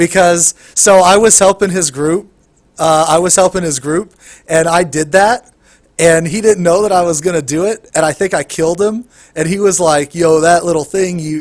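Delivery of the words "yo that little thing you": put-on sarcastic, arrogant voice. Retelling how a player who got killed complained: imitating a sarcastic, arrogant player. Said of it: "he said it all sarcastic and fucking arrogant".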